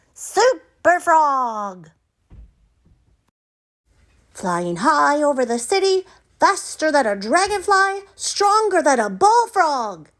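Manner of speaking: excited cry, high and loud. Reading a story aloud, a frog picking a Halloween costume: crying out excitedly. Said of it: "cried Froggy".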